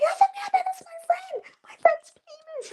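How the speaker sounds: play-acted very high, thrilled, excited shriek. Retelling a friend's reaction in a hotel room, imitating Kiri screaming. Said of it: "She's screaming".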